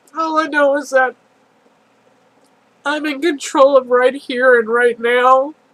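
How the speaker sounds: speaking through tears, tearful crying voice. Speaker sharing a personal moment, crying. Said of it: "I'm not in control because I'm crying".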